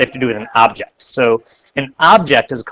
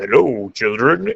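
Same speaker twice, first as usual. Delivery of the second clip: very deep voice, sunk right down low. Explaining sound frequency, the speaker imitates a cartoon character's greeting: deep Chef voice. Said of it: "in a very deep voice".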